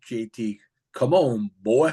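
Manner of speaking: put-on very slow, drawn-out Southern accent. Retelling what someone called out from the background, in a southern drawl. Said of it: "with that Southern draw".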